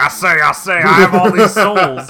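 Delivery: very loud, high, blaring dubbed villain voice. Retelling an anime scene: imitating the english dub voice. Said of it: "The dub voice sounds like".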